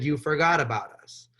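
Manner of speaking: ordinary talk, nothing marked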